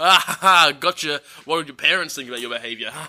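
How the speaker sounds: fast, mock sneering, teasing jeer. Retelling a story, acting out a character taunting a baby monkey, retold mocking taunt.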